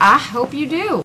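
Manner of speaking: Southern US accent, slightly high-pitched. Replying to thanks at the end of a chat about the movie, southern accent. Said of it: "she totally had a southern accent there".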